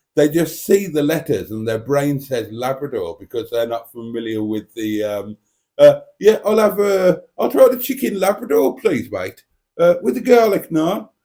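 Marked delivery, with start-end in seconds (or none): 6.2-11.1 clumsy put-on Derbyshire accent, pitched very high. Imitating a customer ordering in a restaurant: bad Derbyshire accent. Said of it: "I'm not very good at doing a Derbyshire accent".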